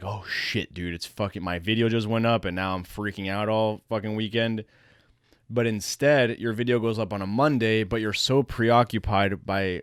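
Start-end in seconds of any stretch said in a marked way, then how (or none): none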